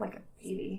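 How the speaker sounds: hushed, whispered mutter under the breath. Voicing a character's aside during a game, muttered under the breath. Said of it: "she says under her breath".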